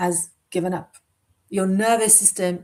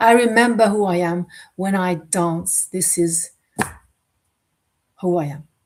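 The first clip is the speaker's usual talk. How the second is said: moved, heartfelt, emotional, raised voice; 5 dB louder than usual. Speaker recalls dancing through burnout, getting emotional. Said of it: "I'm getting emotional".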